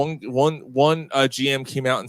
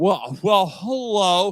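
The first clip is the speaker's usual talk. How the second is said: sports announcer's call, pitched up; 6 semitones higher than usual. Mimicking a home run call by an announcer: imitating the announcer's call. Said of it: "That's her actual call".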